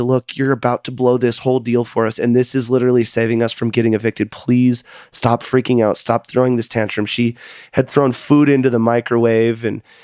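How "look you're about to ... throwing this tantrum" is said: usual speaking voice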